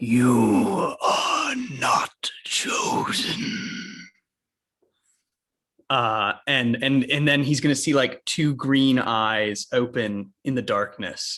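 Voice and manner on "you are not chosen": very slow, deliberate, drawn-out dragon voice. Voicing a creature projected in the darkness to a character: dragon voice. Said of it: "in that dragon voice".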